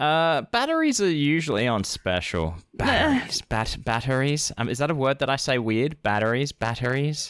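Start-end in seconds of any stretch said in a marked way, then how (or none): 6.0-7.3 mildly American pronunciation. Repeating a word they may say oddly, slightly American accent. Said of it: "You sound more American when you say it".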